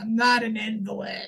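put-on grumbling cranky old man voice. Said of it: "Todd is very cranky old man".

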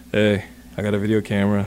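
deep, way-down, very low creepy stalker-like voice. Recalling courting his wife, the speaker imitates his past self in a put-on low creepy voice. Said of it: "why'd your voice get so low?".

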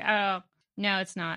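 low, soft, deflated, disappointed tone.

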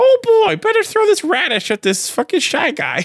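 very high, loud little character voice. Showing how Toad sounds when you select him in Mario 2, Toad voice. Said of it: "I'm doing like Toad when you select Toad in Mario 2".

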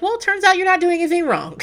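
breezy, high, bright, wide-ranging singsong voice.

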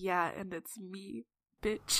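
slow, hushed, very soft mutter under the breath. A character reacts to a lady's warning about the streets, muttering under her breath. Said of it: "She's just gonna kind of mutter under her breath".

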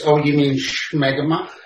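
comic, exaggerated supervillain delivery. Joining the group's joke, in your Dr. Evil voice. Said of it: "as I like to say in my Dr. Evil voice".

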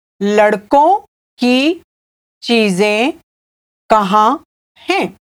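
slow, halting, word by word, broken into pieces. In a Hindi lesson, repeating the example sentence for learners: said slowly. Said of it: "I'll say it again slowly".

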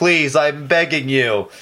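mock, loud, drawn-out pleading yell through a megaphone. Retelling a mayor yelling up to the studios: imitating Linda Gordon yelling on a megaphone. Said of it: "yelling up on a megaphone".

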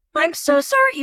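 voice shooting up several octaves at once. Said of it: "My voice suddenly goes up like 5 octaves".

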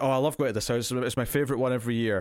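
plain

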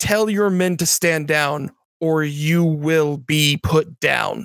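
very stern, severe, commanding, strict and harsh. Player speaking their character's command during a game, very stern. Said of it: "in a very stern voice".

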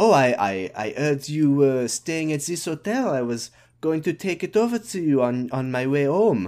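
English with put-on French accent. Retelling what the woman at the store said: french accent. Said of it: "I can do this accent".

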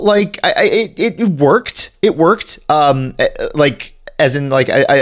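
stumbling over words. Explaining why a plan in the episode worked, stammering. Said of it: "I'm stammering".

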